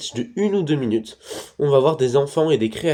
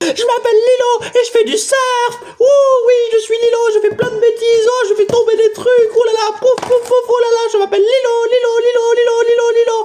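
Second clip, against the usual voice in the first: very high, loud screaming voice; 7 dB louder than usual. Reviewing a film and imitating its character: screaming Lilo impression. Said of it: "C'est pas très convaincant".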